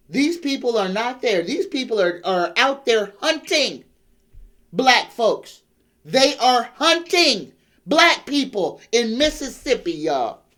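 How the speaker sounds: worked-up, heated, impassioned ranting outcry. Addressing listeners who live in Mississippi: yelling. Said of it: "let me stop yelling".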